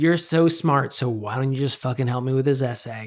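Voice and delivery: put-on begrudging voice. Retelling how peers called the speaker smart: imitating begrudging peers. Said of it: "there's either begrudging".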